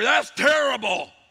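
shrill, loud shouting yell. Parent retelling their own outburst at a kid's sporting event, yelling at the referee. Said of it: "I'm like yelling at the referee".

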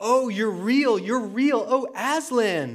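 overjoyed, high-pitched, drawn-out joyful cry. Lucy speaks to Aslan the lion, crying out. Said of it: "cried Lucy".

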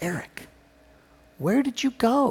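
soft, high, hushed stage whisper. Recalling coming home, quoting what his mother half-whispered in his ear, retelling a half-whisper. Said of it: "she whispered".

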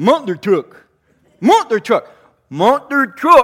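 put-on very loud, high, repeated kid yelling. Telling how a little boy kept shouting at Siri, the speaker retells his yell. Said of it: "And he's yelling".

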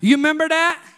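very loud, high-pitched East Tennessee accent. Showing listeners how to say it to their neighbor, east tennessee accent. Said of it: "say it like you live in East Tennessee".

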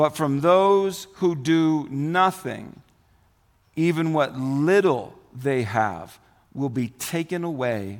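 slow, deliberate, careful, unhurried read-aloud. Reading a passage aloud, checking whether the pace is slow enough: reading slowly. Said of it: "am I reading slow enough?".

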